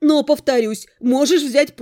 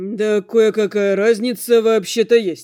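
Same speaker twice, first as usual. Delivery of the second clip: muttered, mumbling, slower; 3 semitones lower than usual. Narrating Damian answering the narrator's question: muttered. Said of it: "пробормотал Дамиан".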